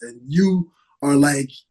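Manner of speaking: usual speaking voice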